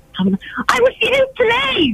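high, slow, defiant tone. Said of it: "Say, "No, I refuse to get out."".

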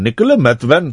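Indian accent, tried on. Saying the same name again to show another accent: Indian accent. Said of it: "If I did it in an Indian accent".

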